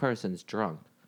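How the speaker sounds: ordinary talk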